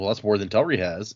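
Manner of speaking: plain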